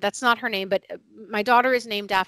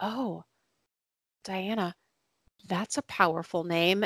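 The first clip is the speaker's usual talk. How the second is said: soft, quiet, hushed, almost half-whispered; 6 dB quieter than usual. Retelling what a woman on the playground bench said to her, retelling a near half-whisper. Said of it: "almost in a whisper".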